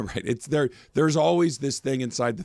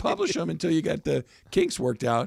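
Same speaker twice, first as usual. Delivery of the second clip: high-pitched, swooping, animated voice; 4 semitones higher than usual. Encouraging another speaker to practice podcasting, the speaker's voice goes high. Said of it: "Why is my voice going high".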